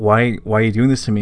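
plain

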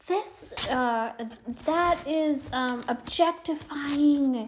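very slow, high, stretched-out scream. Retelling what a woman on the beach screamed: imitating someone screaming. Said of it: "was screaming at the top of her lungs".

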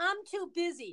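put-on whining, complaining voice. Imitating women who say they are too busy, mock whining tone. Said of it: "I'm going to say it in my whining tone voice".

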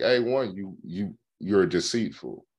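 plain

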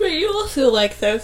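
speaking through a yawn. Talking with someone about their taste in films, yawning. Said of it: "Sorry, I'm yawning".

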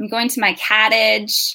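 put-on Michigan accent, local sound. Quoting an ex-boyfriend's everyday remark, in a Michigan accent. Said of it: "that's a Michigan accent".

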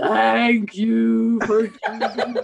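big, loud, booming voice. Retelling finally pushing the button and hearing the voice answer, big booming voice. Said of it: "this big voice from heaven booms".

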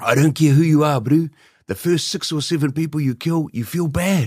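put-on very poor, high-pitched South African Afrikaans accent. Retelling what a man who taught him some Afrikaans said: bad Afrikaans accent. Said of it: "this will be a piss poor attempt, the accent".

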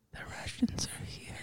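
very quiet, hushed, breathy whisper. Imagining someone at the bedside, imitating someone whispering. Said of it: "she whispered".

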